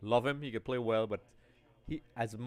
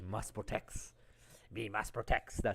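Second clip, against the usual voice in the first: breathy voice breathed out in a whisper; 5 dB quieter than usual. Answering a reminder to protect the cup, in a Sméagol voice. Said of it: "That's my Schmeagol voice".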